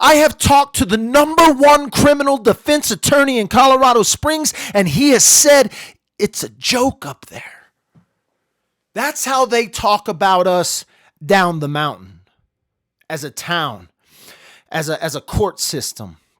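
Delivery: heated, fired-up, worked-up venting. Speaking to viewers watching the stream, a little worked up. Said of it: "I got a little worked up".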